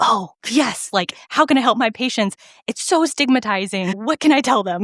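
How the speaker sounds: gushing, keen, eager and excited delivery. Retelling what OB-GYNs ask about helping patients: imitating excited doctors. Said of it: "they're, like, the most excited".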